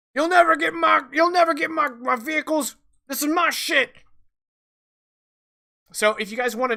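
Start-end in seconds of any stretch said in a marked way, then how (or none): 0.2-3.9 loud, high, raised shout in character. Voicing a gunman under a car firing at the players: shouting in character. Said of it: "And he shouts".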